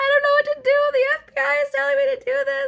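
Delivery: very loud, very high, panicked sobbing. Told they're being scammed, speaker acts out their past self: retelling own panicked crying. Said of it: "start crying and like freaking out".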